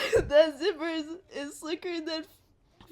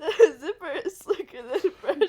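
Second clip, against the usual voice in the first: words breaking up, laughing through them; 4 dB louder than usual. Reading a joke catchphrase aloud for the channel, laughing while talking. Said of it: "You have to stop laughing".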